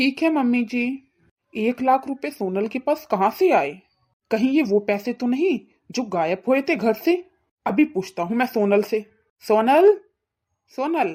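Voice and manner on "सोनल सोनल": loud, raised calling shout. Calling out to Sonal to question her about the money, shouting. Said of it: "क्यों चिल्ला रहे हो इतना?".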